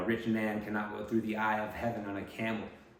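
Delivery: plain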